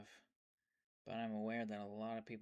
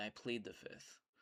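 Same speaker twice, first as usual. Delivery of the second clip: ordinary talk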